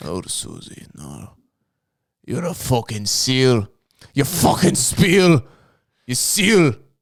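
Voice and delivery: put-on Scottish accent. Riffing insults at an imagined recruit, in a put-on scottish accent. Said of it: "We're doing Scottish. Is that what that is?".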